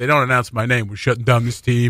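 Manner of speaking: ordinary talk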